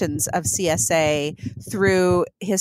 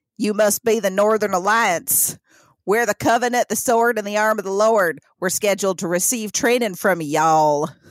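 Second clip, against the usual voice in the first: heavy put-on Missouri drawl; 2 semitones higher than usual. Act out the man in a beret addressing the Northern Alliance in a thick Missouri accent. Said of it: "in a thick Missouri accent".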